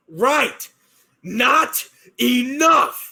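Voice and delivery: high, raging in-character battle scream. Voicing a barbarian screaming back mid-fistfight: screaming in character. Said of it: "I'm gonna scream".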